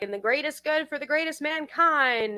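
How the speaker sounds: high-pitched, lecture-style delivery. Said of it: "you know how Ron talks about".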